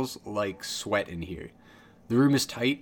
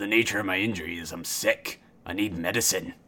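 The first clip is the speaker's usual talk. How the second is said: sick dwarf voice, coughing and hacking; 3 semitones lower than usual. Voicing a sick dwarf who coughs violently before answering: sick dwarf coughing and hacking. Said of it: "He starts to cough and hack violently and goes".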